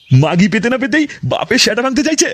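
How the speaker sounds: ordinary talk, nothing marked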